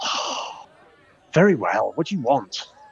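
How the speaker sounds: smooth, silky voice, relaxed delivery. Voicing a character who relaxes as the player walks over, soft silky voice. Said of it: "it's a soft, silky voice".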